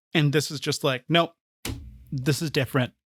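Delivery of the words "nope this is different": normal talking voice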